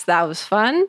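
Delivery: dry, maximally sarcastic. Mentioning having had a lot of panic attacks: sarcastic. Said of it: "in the most sarcastic way possible".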